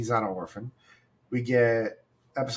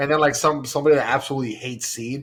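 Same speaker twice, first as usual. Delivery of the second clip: normal talking voice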